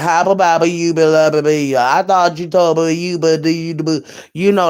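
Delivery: put-on mumbling cartoon voice. Joking about a woman, saying what she'd say: Mushmouth impression. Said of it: "she look like she should be saying".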